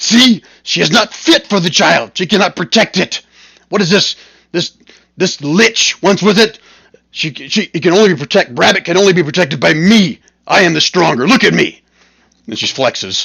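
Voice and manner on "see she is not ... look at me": high, screaming barbarian warrior woman voice. Voicing a barbarian woman claiming the child: screaming barbarian woman. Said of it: "the barbarian woman starts screaming".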